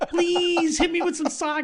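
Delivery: very high, needy, begging pleading tone. Retelling a friend standing with mouth open, asking for sake: imitating a friend begging with mouth open. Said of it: "there with your mouth open".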